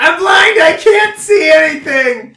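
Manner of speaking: high, loud panicked scream.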